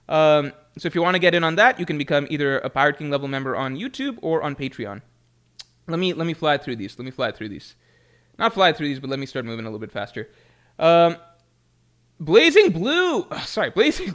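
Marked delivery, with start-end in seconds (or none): 12.2-14.1 high, cracking voice, drawn out. Host reading a supporter's name during thank-yous: voice cracking. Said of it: "My voice is cracking".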